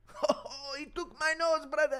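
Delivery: very high exclamation, laughed out. Acting out the Dagestanis' joke again, mimicking how Dagestanis laugh. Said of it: "That's how they laugh, the Dagestanis".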